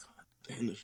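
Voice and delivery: whispered under the breath, very quiet and breathy. Retelling being caught in the moment by his partner: imitating own whisper. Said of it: "she caught me, like, whispering".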